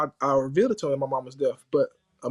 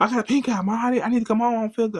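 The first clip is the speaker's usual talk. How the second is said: loud, high-pitched yell; 7 semitones higher than usual. Retelling calling his mother from school with pink eye: retelling yelling at his mom. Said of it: "you gotta stop yelling at her".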